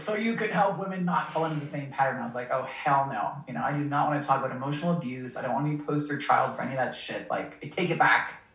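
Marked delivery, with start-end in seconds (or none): 0.0-2.2 mock mild, booming big voice. Retelling a voice she heard in the taxi, imitating a booming voice. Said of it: "this like booming voice".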